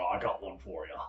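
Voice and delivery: put-on Scottish accent. Retelling a joke a comedian told a police officer: Scottish accent. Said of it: "I'm gonna say it in the uh, Scottish comedian's voice".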